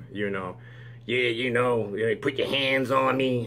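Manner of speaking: mocking high nasal voice. Speaker mimics a man's tough-guy rant, in a mocking high-pitched nasal voice. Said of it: "high pitched female nasal voice".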